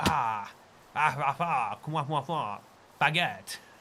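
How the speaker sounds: slow, haughty, snooty put-on French accent. Explaining how to do a French accent, in a haughty French accent. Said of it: "when you do a French accent, you must speak as though you you're looking down on everyone".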